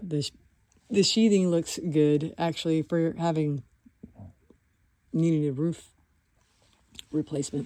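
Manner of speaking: speech broken by hiccups. Someone inspecting an attic, speaking with the hiccups. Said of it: "I have the hiccups".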